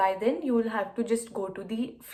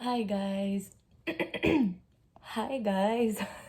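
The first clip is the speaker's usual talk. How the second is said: drowsy, sleepy, just-woke-up early-morning voice. Greeting viewers right after waking up in the morning, sleepy voice. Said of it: "That's my sleepy voice on".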